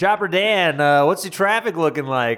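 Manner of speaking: loud, high-pitched fake radio DJ announcer voice.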